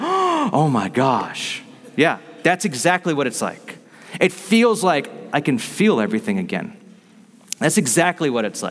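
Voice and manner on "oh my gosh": astonished, swooping, amazed gasp. Acting out the crowd hearing sins forgiven: imitating an amazed crowd. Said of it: "and it sounds like this".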